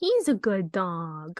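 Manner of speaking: put-on voice of a talking cat. Retelling a funny movie line, trying an impression of Gigi. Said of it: "I wish I could do an impression of Gigi".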